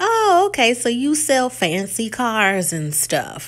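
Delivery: superior, condescending, talking-down tone. Retelling how a woman asked a man about his job, mock-condescending tone. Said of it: "in kind of this condescending tone".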